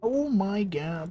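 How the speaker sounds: put-on silly voice, high and slow.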